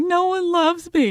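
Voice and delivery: mock very high, tearful, drawn-out crying voice. Retelling crying under the table holding a dog: imitating own past crying.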